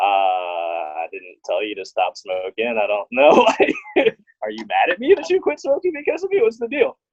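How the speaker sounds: confused and disbelieving tone. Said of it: "I'm still confused".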